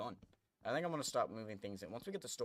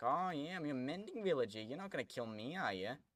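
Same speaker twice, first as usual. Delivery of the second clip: put-on smug, know-it-all tone, pitched up; 5 semitones higher than usual. Voicing the mending villager in the game: imitating a smug villager. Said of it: "Thinks he's so smug".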